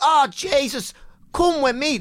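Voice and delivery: very high-pitched, slow, unhurried Irish voice. Retelling what the men in the flats said: like a Roddy Doyle novel. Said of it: "sounded like they were a bloody Roddy Doyle novel".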